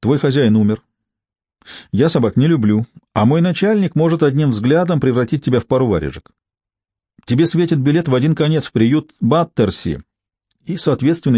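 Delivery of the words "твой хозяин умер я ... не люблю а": plain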